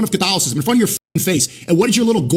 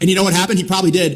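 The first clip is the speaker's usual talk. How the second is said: usual speaking voice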